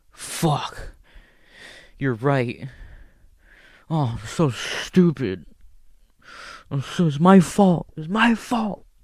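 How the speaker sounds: put-on slow, boozy, drawn-out, drunken rambling. Retelling a guy arguing with his girlfriend: imitating a drunk guy arguing. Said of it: "I'm drunk type shit".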